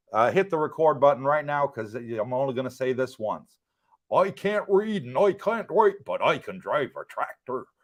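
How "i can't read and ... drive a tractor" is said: accent from Norfolk. Asked about accents, the speaker shows off a Norfolk accent. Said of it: "My best Norfolk accent".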